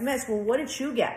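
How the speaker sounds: ordinary delivery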